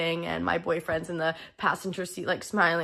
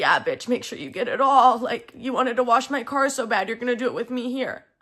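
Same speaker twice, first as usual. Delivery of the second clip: mocking jeer while laughing, higher and louder; 5 semitones higher, 5 dB louder than usual. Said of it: "he's sitting there laughing at me".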